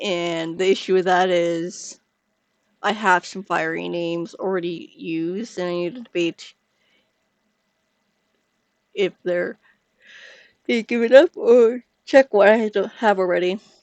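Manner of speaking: speech broken by yawning. Talking through a family tree and apologizing for yawning, yawning while talking. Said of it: "sorry for the yawning".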